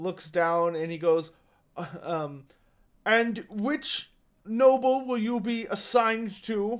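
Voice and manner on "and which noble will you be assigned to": high, wobbling, warbly voice. Narrating the scene, the speaker voices the character signing up hunters: warbling voice. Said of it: "he more warbles".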